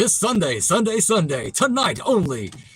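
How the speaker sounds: high monster truck rally commercial announcer voice. Showing off their commercial voice, the speaker does a monster truck rally announcer voice. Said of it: "like the the monster truck rally guy".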